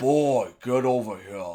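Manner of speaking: loud, bellowing game warrior character voice. Showing listeners the best of your voices, do a Kratos impression. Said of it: "that's my best Kratos impression".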